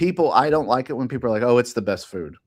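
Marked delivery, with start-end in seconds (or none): none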